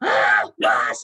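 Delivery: panicked scream in character. Reacting in character to seeing a giant wasp: screaming in character. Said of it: "I just scream back".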